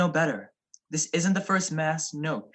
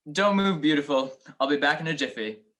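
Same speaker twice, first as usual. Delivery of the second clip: plain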